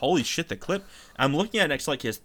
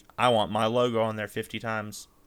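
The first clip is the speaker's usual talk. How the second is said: ordinary talk, nothing marked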